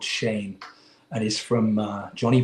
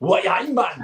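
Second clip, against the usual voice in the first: full-on, strong Geordie accent, much higher pitch; 9 semitones higher than usual. Discussing northern English accents, the speaker tries a Geordie line, full-on Geordie accent. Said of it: "that's going up to Scotland. That's a little bit too full on".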